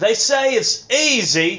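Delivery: put-on very high, very slow English-accented voice. Doing an impression of a street performer after being asked: imitating an English street performer. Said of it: "Do the impression of him".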